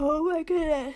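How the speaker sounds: loud words stretched out mid-yawn. A tired speaker describing an office breaks off, yawning. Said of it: "I need to stop yawning for real now".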